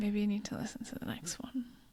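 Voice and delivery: fast, teasing whispered delivery.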